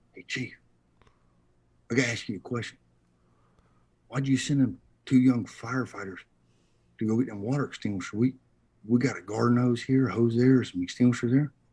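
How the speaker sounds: hushed half-whisper. Retelling a maintenance worker's question to the chief: imitating someone half-whispering. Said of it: "he comes over and he whispers to me".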